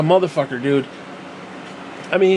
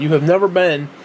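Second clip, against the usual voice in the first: ordinary talk, nothing marked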